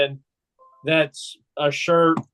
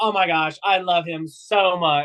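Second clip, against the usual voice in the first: put-on sorority girl voice; 2 semitones higher than usual. Teasing the other speaker by imitating how he praised someone, mock sorority girl voice. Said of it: "It sounded like a like a sorority girl".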